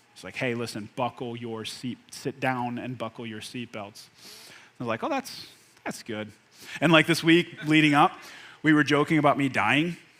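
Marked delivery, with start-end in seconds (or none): 0.4-4.1 grave, very quiet, low, serious pilot voice. Retelling the pilot's intercom announcement on a flight, imitating a serious pilot voice. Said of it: "he had like a serious voice on".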